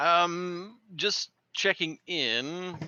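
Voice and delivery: high, slow, drawn-out sarcastic delivery. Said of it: "I was just being sarcastic".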